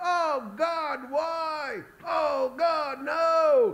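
very high, frantic, desperate scream. Describing a film scene, acting out Abraham screaming at God. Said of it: "screaming at God".

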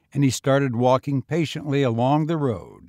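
ordinary delivery, nothing marked

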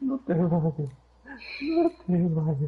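put-on high, drawn-out, devastated, heartbroken pleading. Retelling a kid pleading in Spanish as the match glitched, imitating a devastated kid. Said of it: "you can hear the devastation in his voice".

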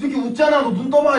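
loud, high-pitched, stern mock bark, accusing tone.

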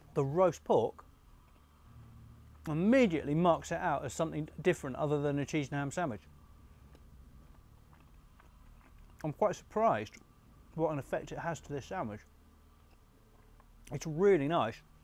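talking with mouth full, chewing. Tasting a cuban sandwich right after a big bite, talking with mouth full. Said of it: "It's far too much in my mouth".

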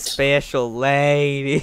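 southern drawl with the word lady drawn out. On stream, a player repeats another player's phrase: southern accent. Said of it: "Why'd you say that with a southern accent?".

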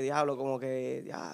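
low, soft, murmured sultry voice.

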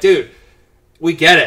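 loud, exasperated, fed-up groan.

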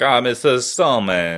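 put-on heavy Spanish accent, laid on thick. Retelling what a stuntman met in a sauna said, in a thick Spanish accent. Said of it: "he has a real thick Italian Spanish accent".

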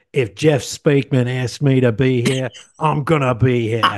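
put-on Aussie accent. Imagining guests from australia at the listener's wedding, australian accent. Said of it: "That's a really good accent".

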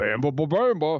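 hard-to-follow, garbled cartoon-character gibberish babble. Mimicking a hard-to-understand guy giving announcements: Star Fox character voice. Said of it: "He sounded like the character".

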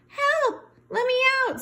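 very high, faint, feeble, frightened pleading cry. Narrator reads Stuart, rolled up inside a window shade, in a weak Stuart Little voice. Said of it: "his voice was so weak".

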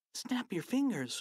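voiced, high stage half-whisper. A boy prompts his friend as they try to dehypnotize someone, half-whispered. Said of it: "whispered Harold".

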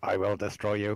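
robotic, mechanical-sounding voice. Joking after being told to chill out, robot voice: robot voice. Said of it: "chill out, robot voice".

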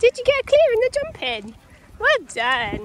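high, loud cooing voice.

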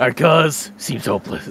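loud, booming alien creature voice. Playing a game together, one player tries a Vortigaunt impression. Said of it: "Do you think I could do a good Vortigaunt impression?".

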